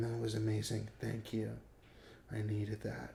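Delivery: very quiet, close, barely audible half-whisper. Retelling what a woman said after sex: imitating a half-whisper. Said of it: "she's whispering".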